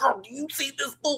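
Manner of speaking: very high-pitched hollering, yelling. Retelling watching a show with others, imitating own yelling at viewers. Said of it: "I'm pausing to yell at everybody".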